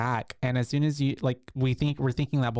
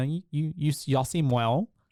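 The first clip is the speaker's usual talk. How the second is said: ordinary talk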